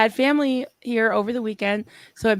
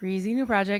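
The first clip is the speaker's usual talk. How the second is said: plain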